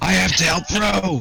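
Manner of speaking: yelling, high and loud. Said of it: "I said, I yell".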